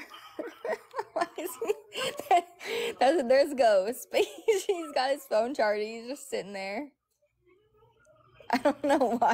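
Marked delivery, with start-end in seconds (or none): 1.1-5.8 high giggling through the words, cracking up. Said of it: "I'm cracking up at this view".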